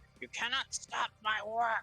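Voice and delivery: very high, shrill, shrieking hag yell. Voicing the green hag as she attacks a character: yelling as the green hag. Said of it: "And she yells".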